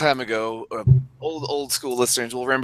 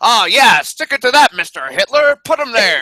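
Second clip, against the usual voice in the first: high, loud, forties-style radio announcer voice; 10 semitones higher, 7 dB louder than usual. Joking about a game trailer announcer, like a time traveler from the forties: 1940s radio announcer voice. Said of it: "like a time traveler from the forties, like, got off the radio".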